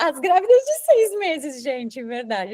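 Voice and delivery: high-pitched, laughing through the words. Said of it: "eu tô rindo, mas de desespero".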